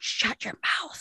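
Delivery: slow, soft whisper.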